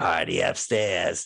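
put-on froggy, croaky voice. Recalling a movie, quoting a guy with a froggy voice. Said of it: "this guy with a froggy voice goes".

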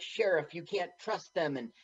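plain

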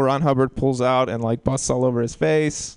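ordinary talk, nothing marked

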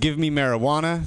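ordinary talk

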